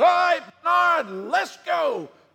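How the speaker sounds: very high, loud final shout.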